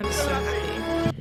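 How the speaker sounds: dead flat monotone, no lift, slightly high pitch. Quoting the last line of the film: monotone Mister Darcy voice. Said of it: "in the most monotone voice".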